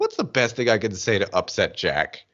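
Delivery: normal talking voice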